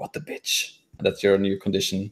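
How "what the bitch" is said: very quiet, hushed whisper. Voicing characters who whisper about another character: whispering.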